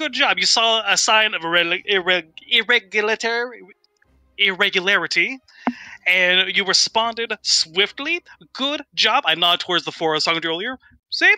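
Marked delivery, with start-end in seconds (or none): 0.0-9.2 slow, proud tone, trying hard to sound proud. Speaking in character to Quentin, trying to sound proud. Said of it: "I'm actually gonna try and sound proud of".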